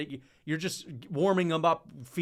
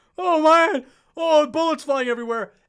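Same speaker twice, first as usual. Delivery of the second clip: mock very high, very loud, frightened yelp; 11 semitones higher, 11 dB louder than usual. Describing a fighter's opponent under fire, acting out his panic in a mock-scared voice. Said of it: "You're going to be shivering your timbers".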